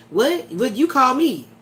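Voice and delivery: put-on indignant, insulted, offended tone. Retelling how the other performer flips the script: imitating an offended reply. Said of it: "be acting like".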